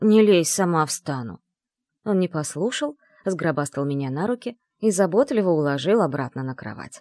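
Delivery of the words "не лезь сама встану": hissed, louder. Having fallen off the bed, she pushes away the dragon's hand, hissed. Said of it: "прошипела я".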